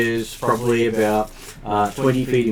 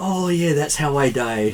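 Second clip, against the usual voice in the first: gleeful, delighted, very happy, cheerful voice; 3 semitones higher than usual. Narrating a spell hitting it, the speaker voices the dying creature in a very happy voice. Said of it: "in a very happy voice".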